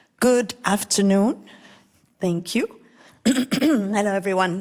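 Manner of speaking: hoarse, raspy voice. Greeting the audience at the start of a talk: raspy voice from a cold. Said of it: "Excuse my raspy voice".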